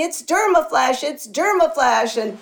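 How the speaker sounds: put-on scream, sudden and excited. Retelling running out of the shower soaking wet: imitating own screaming.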